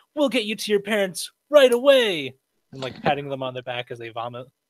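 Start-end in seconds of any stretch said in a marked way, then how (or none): 0.2-2.4 booming heroic voice, pitched up. Consoling screaming children on the way to safety, Power Ranger voice. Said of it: "in my Power Ranger voice".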